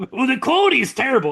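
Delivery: very high-pitched, complaining boomer voice. Mocking older Twitter users who complain about stream quality: imitating a complaining boomer. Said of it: "You sound like the fucking boomers on the fucking".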